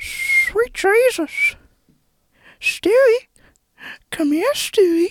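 put-on old grandpa voice. In a guess-who voice game, a player tries a voice: Herbert from Family Guy impression. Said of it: "you're the old grandpa from Family Guy".

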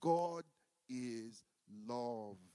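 spoken slowly. Leading a group to repeat a phrase again, saying it slowly. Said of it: "Slowly this time".

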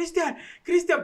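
soft, hushed, very high-pitched calling out. Retelling calling for a friend in a crowd: imitating a low-volume call for someone. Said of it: "empieza a gritar, "Cristian, Cristian", pero bajito".

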